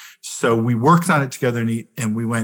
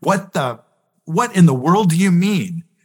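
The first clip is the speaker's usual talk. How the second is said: playful, teasing, pushing raised voice, pitched up; 6 semitones higher than usual. Retelling pushing back on someone in an argument: imitating own raised voice, playfully pushing. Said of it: "voices raised".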